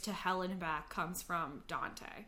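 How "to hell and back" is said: normal talking voice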